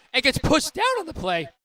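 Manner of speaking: voice cracking. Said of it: "That was a voice crack".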